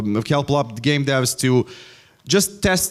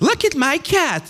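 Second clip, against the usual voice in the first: put-on text-to-speech narrator voice, higher pitch; 14 semitones higher than usual. Mocking AI voices that sound fake: imitating the TikTok AI lady voice. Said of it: "that annoying lady from TikTok that's like".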